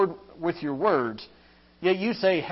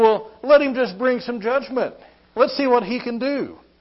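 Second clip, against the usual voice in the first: scoffing, mocking, jeering, full of scorn; 5 semitones higher, 5 dB louder than usual. Imitating scoffers who dare god to bring judgment: imitating a mocking tone. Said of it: "these people can mock about God".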